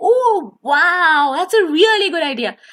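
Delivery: lively, sing-song up-and-down rising and falling intonation. Showing how to respond to someone's idea, pitch going up and down. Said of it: "I raised it and I lowered it".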